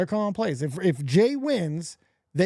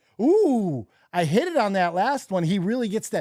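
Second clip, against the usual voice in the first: ordinary talk, nothing marked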